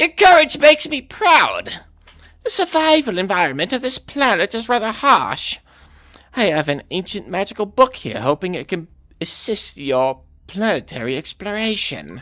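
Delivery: loud, very high little kitty voice. Voicing a game character's dialogue aloud, in a cat voice. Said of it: "what's like a good like cat voice?".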